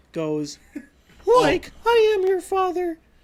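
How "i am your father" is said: loud, very high, goofy cartoon voice. Giving listeners a prime example of a guessing game, throwing them off with a Shaggy voice. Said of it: "I'm going to do it in Shaggy's voice".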